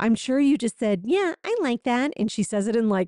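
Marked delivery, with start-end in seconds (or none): 1.0-2.1 taunting, mocking baby talk voice. Retelling one woman echoing another's words, in a mocking baby voice. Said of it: "like in like a mocking baby voice tone".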